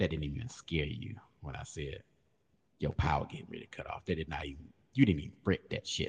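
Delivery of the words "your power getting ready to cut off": fast, low creepy voice. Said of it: "that damn voice that be in somebody goddamn bushes".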